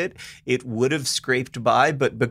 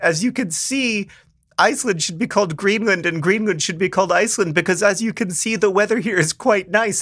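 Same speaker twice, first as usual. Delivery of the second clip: put-on Icelandic accent; 7 semitones higher than usual. Retell what a tour guide said without irony on an August visit, imitating a sweet Icelandic accent. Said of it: "In their sweet Icelandic accent".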